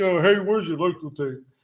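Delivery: mock sour, grumbling, grumpy voice. Retelling a customer in the store suddenly asking for something: imitating a grumpy voice. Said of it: "he gets like this grumpy ass voice".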